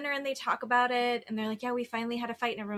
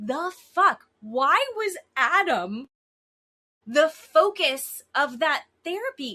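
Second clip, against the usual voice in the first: outright loud yelling with a raised voice; 4 semitones higher, 7 dB louder than usual. Discussing a therapy session, yelling. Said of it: "I'm yelling right now".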